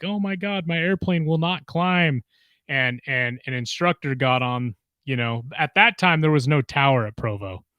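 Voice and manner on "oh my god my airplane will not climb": panicked, frantic, losing-it voice. Retelling a pilot's call over the radio: imitating a panicking pilot. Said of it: "freaking out".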